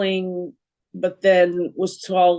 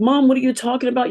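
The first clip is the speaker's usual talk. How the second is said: pleading, begging tone; 6 semitones higher than usual. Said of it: "I'm pleading with her".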